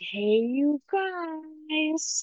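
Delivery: put-on high, full-lung child's scream, guys stretched. Recounting a kid at the skate park, the speaker mimics him: mimicking a kid screaming. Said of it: "scream at the top of his lungs".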